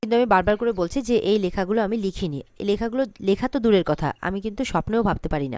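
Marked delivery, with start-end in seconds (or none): none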